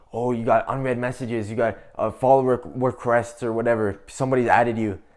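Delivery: plain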